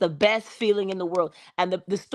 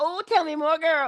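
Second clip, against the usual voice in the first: gushing voice, higher; 9 semitones higher than usual. Pretending to throw rose petals while urging someone on: gushing like the Coming to America petal thrower. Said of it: "I'm the one with a little basket of rose petals talking about".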